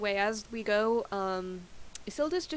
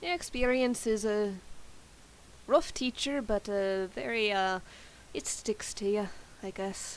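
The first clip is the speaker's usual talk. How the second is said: put-on rough, amateur, loosely done Irish accent. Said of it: "a seven-minute YouTube video on Irish accents".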